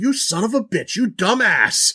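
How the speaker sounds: put-on cranky old-man rant. Acting out a man whose mop bucket a protector bot knocked over, imitating an angry eighties old man. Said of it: "he gets super like old man eighties angry".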